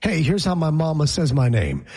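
plain

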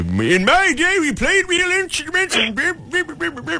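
put-on high old prospector voice.

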